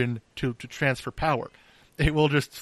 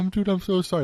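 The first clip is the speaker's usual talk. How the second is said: pitched-up, apologetic, almost crying; 6 semitones higher than usual. Retelling a friend apologizing after blowing up a CV, imitating friend almost crying. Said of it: "like almost crying".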